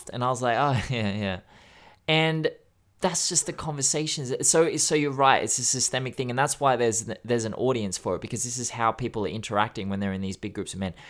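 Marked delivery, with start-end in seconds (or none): 0.6-1.4 chuckling, laughing through the words, easygoing. Retelling own reply to a friend's crude remark: imitating own past laughing. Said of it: "I laughed, man. I laughed".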